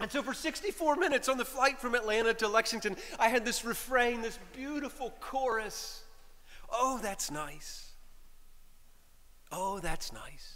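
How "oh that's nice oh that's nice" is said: mock sweet, sincere voice, slower. Retelling a refrain repeated beside them on a flight, imitating a sweet, sincere voice. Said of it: "In the sweetest, most sincere voice".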